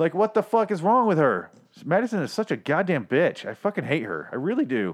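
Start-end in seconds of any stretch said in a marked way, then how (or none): none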